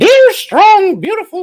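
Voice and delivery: very high, loud, sing-song cartoon voice, pitch way up. Reading the back of a coloring book aloud in a Mickey Mouse voice. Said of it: "let me do it in a little playful uh, voice. ... it's Mickey Mouse".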